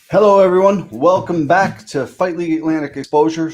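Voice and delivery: loud, high, excited yelling. Host opening episode one hundred forty-six of the show, yelling. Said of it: "Sorry for yelling".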